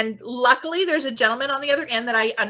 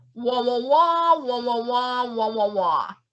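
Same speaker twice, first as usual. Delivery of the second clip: wordless, muffled wah-wahs like a muted trombone. Retelling a garbled voice on the elevator phone: Charlie Brown adult voice. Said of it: "Just like a Charlie Brown parent or adult".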